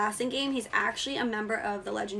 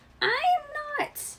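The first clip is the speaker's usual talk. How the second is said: very high voice cracking as it rises. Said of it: "my voice is cracking as it goes up".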